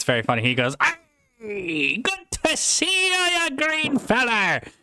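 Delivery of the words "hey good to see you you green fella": very high-pitched, very slow, drawn-out pirate voice. Quoting how a guy who talks like a pirate greets people, pirate voice. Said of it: "this guy talks like a pirate".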